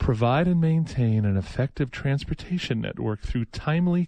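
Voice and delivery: put-on radio announcer broadcaster delivery. Reading a passage aloud, doing an NPR voice. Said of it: "I'm going to do my N P R voice for this".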